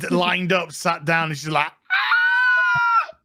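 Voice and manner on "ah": very high, breathy, drawn-out, acted-out feminine scream. Retelling a scene where she finds bodies lined up, imitating a feminine scream. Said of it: "that was a really feminine scream".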